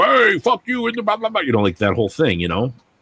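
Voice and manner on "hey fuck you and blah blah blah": put-on angry man voice, very high. Acting out telling off a company that wouldn't fix a mistake: put-on angry man persona. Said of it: "Angry Man Chonko and being like".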